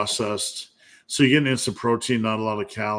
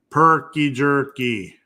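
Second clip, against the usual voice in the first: earnest, best-effort put-on Wisconsin accent; 3 semitones higher than usual. Host plugging a jerky product to listeners: best Wisconsin accent. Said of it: "in my best Wisconsin accent".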